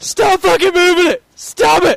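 very loud, shrill, very high, frantic panicked screaming. Retelling hugging a pole while others sat still as it shook: retelling panicked yelling. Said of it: "I'm just freaking out".

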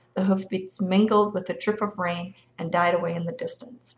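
plain reading voice

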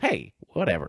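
casual delivery in another speaker's manner. Showing how Fred actually talks: imitating Fred. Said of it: "he actually more talks like this".

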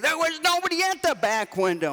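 mock very high-pitched yell. Retelling an argument with a lady shouting through a window: retelling a yell. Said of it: "I yelled back at her".

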